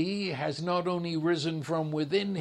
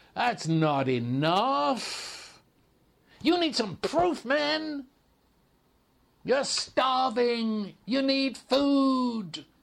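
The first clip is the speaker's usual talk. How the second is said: put-on tempter voice, pitched higher; 7 semitones higher, 3 dB louder than usual. Retelling Satan tempting the hungry Jesus in the desert: voicing Satan. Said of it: "Satan looks at him and says".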